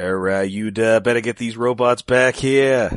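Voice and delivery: put-on Boston accent. Joking about a comic character turning Boston when angry: Emma Frost with Boston accent. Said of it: "she also gets super Boston-y".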